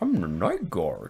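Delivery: flat, robotic speech synthesizer voice. Acting out a night guard's movie line: text-to-speech Jimmy Stewart voice. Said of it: "he sounded like text-to-speech Jimmy Stewart".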